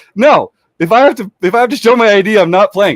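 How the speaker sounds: put-on heated voice. Retelling how a tournament player stormed off over showing ID: retelling an animated refusal. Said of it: "got very flushed and animated".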